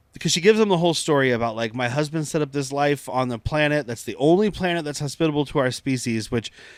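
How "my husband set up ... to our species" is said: usual speaking voice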